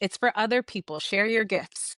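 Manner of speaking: ordinary talk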